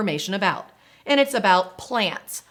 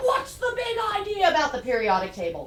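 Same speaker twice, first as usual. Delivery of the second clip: sassy, challenging, pitched-up voice; 8 semitones higher, 3 dB quieter than usual. Acting out college students challenging the lecturer: imitating a sassy demanding student. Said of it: "They put their hand on their hip".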